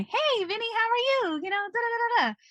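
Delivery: very high, sunny, cheerful, friendly voice. Explaining interview manner to Vinny, demonstrating the happy, friendly voice. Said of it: "I'm not talking in my happy, friendly voice".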